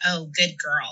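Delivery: put-on creepy, predatory, nasty sneering old man voice. Retelling a man's creepy retort to them, imitating a sneering old man. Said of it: "Like very like sneering".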